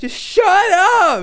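very high, loud scream, drawn out upward. Retelling how an older man stood up and turned on a kid: retelling a man screaming. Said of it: "starts fucking screaming at this kid".

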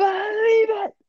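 bad put-on character voice, very high and loud. Lacking an audio clip, the hosts voice the quote themselves: horrible voice acting. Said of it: "our horrible voice acting skills".

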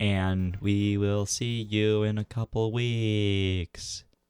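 ghostly, ghost-like put-on voice. Co-host signing off the episode to listeners: sounding like a ghost. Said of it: "You sound like a ghost".

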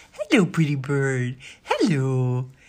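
cooing voice used with babies and cute dogs. Reading a story, the narrator voices a character greeting a parrot; baby-talk voice. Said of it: "in a voice people use with babies and cute dogs".

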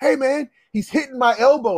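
high-pitched, heated, angry complaining shout. Retelling yelling at the ref during a basketball game: imitating an angry yell. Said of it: "I yelled at the ref".

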